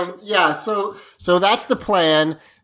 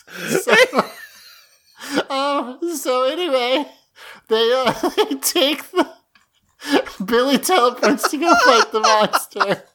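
talking through laughter, higher pitch; 7 semitones higher than usual. Summing up a story while still laughing at a joke: laughing while talking. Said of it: "I can't stop laughing".

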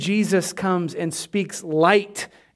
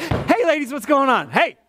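sarcastic, high, swooping voice that pops out; 8 semitones higher than usual. Acting out jumping from behind a tree to greet: pretend sarcastic jump-out greeting. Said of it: "I'm very sarcastic".

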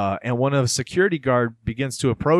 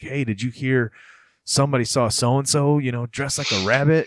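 imitated hushed whisper. Retelling how kids in a small town passed on rumors: imitating a rumor being whispered. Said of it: "whispers like".

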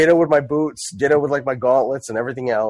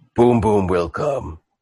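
low, slow, halting, lumbering dim brute voice. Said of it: "he goes, he goes".

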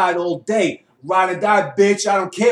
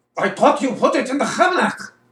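laid-on put-on German accent with raised pitch; 6 semitones higher than usual. Asked to redo the line in different accents, the speaker switches to a german accent.

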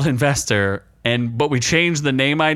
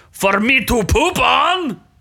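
very high, squeaky, put-on Mexican accent; 9 semitones higher than usual. Quoting what the puppet dog says to a friend, Insult the Comic Dog impression. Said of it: "He sounds Mexican".

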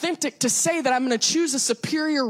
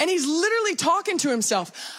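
ordinary talk

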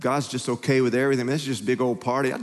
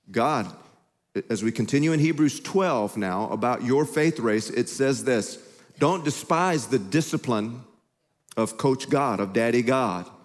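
ordinary talk, nothing marked

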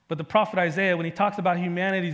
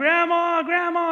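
very high, loud, frantic panicked scream; 11 semitones higher, 5 dB louder than usual. Retelling panicking among strangers in a store and calling out for grandma: retelling a panicked scream. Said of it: "and I'm screaming".

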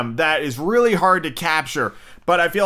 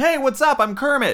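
plain, zero-effort, pitched-up ordinary dude voice; 9 semitones higher than usual. Mocking the current Kermit performer as just a dude talking: imitating current Kermit voice. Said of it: "Kermit now basically just sounds like".

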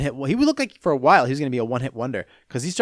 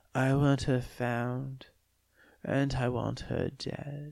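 put-on soft voice, much quieter and slower; 11 dB quieter than usual. Mocking how a movie villain spoke, imitating speaking softly. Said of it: "He spoke softly".

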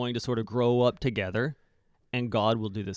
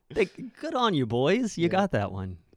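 put-on dripping sarcastic, sing-song, pitched-up voice; 6 semitones higher than usual. Voicing the Gospel writer Mark mocking the Pharisees: sarcastic. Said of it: "in a very sarcastic way".

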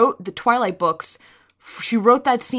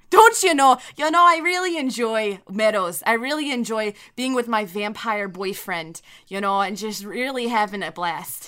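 Midwestern accent laid on thick, exaggerated. Joking about how people in the Midwest talk, doing a Midwestern accent impression. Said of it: "That's a pretty good impression".

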